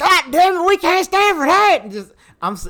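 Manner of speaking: exaggerated Texan accent. Retelling how others react to a kid's friend moving away, cartoonish texas accent. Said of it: "a very cartoonish rendition of your accent".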